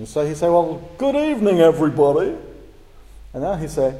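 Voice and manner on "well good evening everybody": loud, arrogant presenter voice, bad put-on accent. Imitating a computer-generated character played by an actor greeting everybody, imitating an arrogant presenter. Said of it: "adopt this very arrogant approach".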